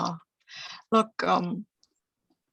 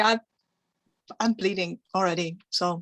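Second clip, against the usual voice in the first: plain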